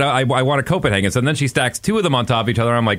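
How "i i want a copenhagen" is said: ordinary talk, nothing marked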